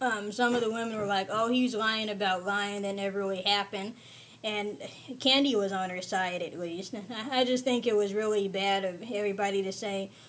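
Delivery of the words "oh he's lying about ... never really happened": ordinary delivery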